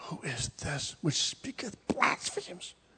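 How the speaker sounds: hushed whisper under the breath. Reading the scribes' reasoning from scripture aloud: whispering. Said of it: "I'm whispering up here".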